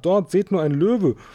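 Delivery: high-pitched shout, loud enough to carry far. Reading a character alerting the others to something; shouting. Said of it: "schrie Konrad".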